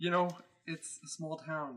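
half-whispered, under the breath, confidential tone. Speaking in character during a conversation with another character, half-whispering. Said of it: "I'm just whispering".

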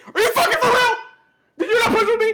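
play-acted shrill, loud, furious high-pitched screaming. Speaker retells screaming at a teammate who didn't push: retelling own screaming. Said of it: "i was screaming".

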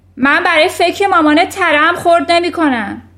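furious, very loud, high-pitched yelled outburst. Reading a story aloud, voicing a character shouting at a stammering girl: shouted. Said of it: "داد زد".

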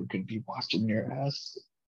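put-on, quiet whisper. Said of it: "Roger Goodell right now whispering in his ear".

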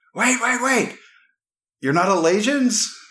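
yelling out. A hidden man in the woods breaks his cover, yelling out. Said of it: "This guy appears out of the woods at that point because he used his reaction to yell and break his cover".

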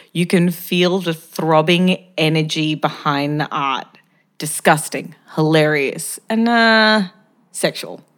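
normal talking voice

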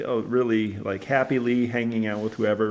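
ordinary delivery

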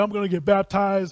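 thrilled, excited, eager delivery. Acting out the eunuch's words before baptism: imitating an excited man. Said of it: "He's excited".

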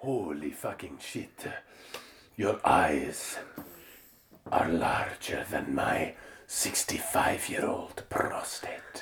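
put-on breathy, sexy Spanish accent. Antonio speaks to Alita after she jumps out; do Antonio's sexy Spanish accent. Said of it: "in his sexy Spanish accent".

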